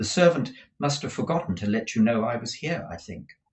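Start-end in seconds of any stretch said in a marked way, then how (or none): none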